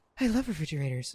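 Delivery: breathy, airy voice, speaking out of breath. Trying a speech pathologist's advice to speak out of breath, breathy, airy voice. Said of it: "my speech pathologist told me to speak out of breath. So my my first instinct was just go".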